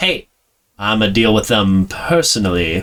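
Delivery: echoey, reverberating voice. Speaker retells a voice suddenly heard by the group: echoing voice. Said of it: "this kind of like echoing voice like".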